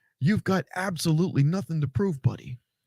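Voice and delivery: put-on sarcastic wrestler voice. Retelling what Triple H told Cody: sarcastic Triple H impression. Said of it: "In that sarcastic way that he does".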